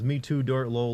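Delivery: normal talking voice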